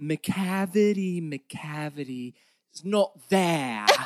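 poorly faked British accent. Mocking the accent she used despite her dialect coach, mocking Taylor's accent. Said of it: "hard on this accent it shows".

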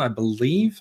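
rising pitch at end of believe. Naming a Transformers figure, wanting to hear he is right: rising at end of believe. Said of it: "Upward inflection on the end of that".

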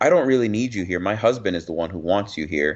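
put-on defensive tone. Speaker retells what a woman said to her, mimicking someone defensive. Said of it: "she kept being all defensive".

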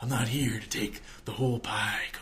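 soft, hushed whisper. Recapping a wrestling promo, the speaker reenacts Robert's words to Cody, whispering. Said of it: "And he's like whispering".

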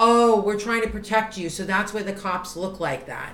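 plain

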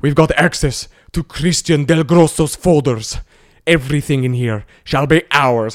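put-on slow, booming, drawn-out Russian accent. Retelling a bit about people in Russia getting into the phone: impression of people in Russia. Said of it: "So I did this whole impression of".

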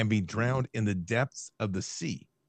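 ordinary talk

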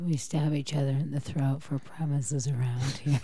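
put-on scary, menacing, sinister voice. Discussing shared joke premises, the speaker tries a put-on scary voice. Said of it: "That was the scariest voice I could come up with".

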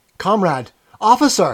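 sudden, high-pitched, loud crying out. A man flung on his knees pleads with the officer, crying out. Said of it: "he cried".

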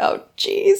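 exasperated whisper, pitched high.

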